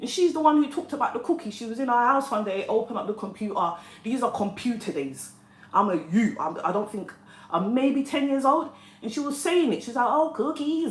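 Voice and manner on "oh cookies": put-on strong American accent, higher pitched. Retelling what an auntie from America said about cookies: imitating a strong American accent. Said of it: "strong American accent".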